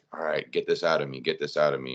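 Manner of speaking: ordinary talk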